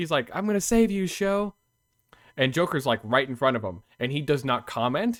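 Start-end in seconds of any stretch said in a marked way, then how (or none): 0.3-1.5 high-pitched yelling out. Retelling a scene where Shinra yells at Joker: imitating Shinra yelling. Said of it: "he just yells at Joker".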